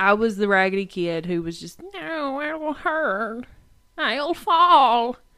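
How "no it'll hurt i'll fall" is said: put-on very slow, high-pitched little-old-lady grandma voice. Remembering being a terrified kid of eight, quoting herself in a grandma voice. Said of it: "I sounded like a grandma at 8".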